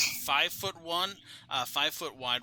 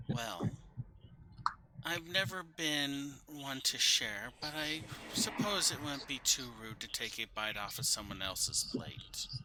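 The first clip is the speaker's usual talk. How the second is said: hushed, soft half-whispered voice; 5 dB quieter than usual. Narrating to Ingrid, a voice half-whispers from the backyard, soft half-whisper. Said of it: "you hear this soft voice whisper".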